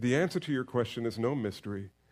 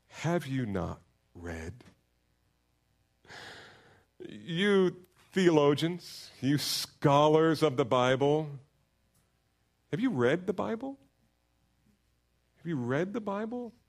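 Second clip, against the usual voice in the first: put-on sarcastic voice, higher pitch; 4 semitones higher than usual. Voicing Jesus questioning the Bible scholars: imitating Jesus, sarcastic. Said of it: "this is kind of a holy sarcasm because Jesus then says".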